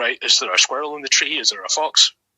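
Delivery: ordinary delivery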